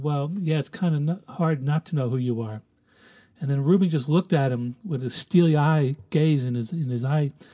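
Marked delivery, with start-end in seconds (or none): 0.0-2.6 mock-sheepish, imitated sheepish manner. Speaker retelling Gus's reply to Ruben, imitating a sheepish reply. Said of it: "he sheepishly responded".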